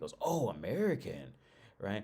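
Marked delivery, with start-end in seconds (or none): 0.2-1.3 choppy, halting broken English. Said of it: "in real broken English".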